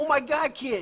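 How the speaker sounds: high, loud, thick, exaggerated mock Boston accent.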